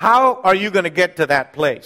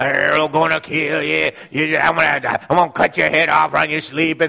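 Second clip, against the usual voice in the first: put-on rough, creaky, menacing voice. Speaking to an audience, acting out someone scaring their spouse, in a different voice. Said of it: "in a different voice".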